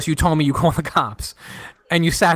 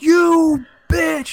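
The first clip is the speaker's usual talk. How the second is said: very high, full-throated, top-of-the-lungs scream; 12 semitones higher, 3 dB louder than usual. Recalling yelling out in a concentrating gaming hall, retelling a loud yell. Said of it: "just some dude just yells".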